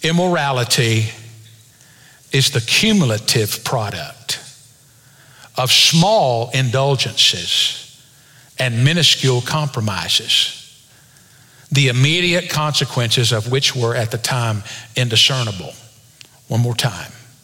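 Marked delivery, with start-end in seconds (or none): 0.0-15.7 very slow, deliberate, drawn out word by word. Quoting a book sentence with big words, the speaker says it slowly. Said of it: "I'm going to say it slow".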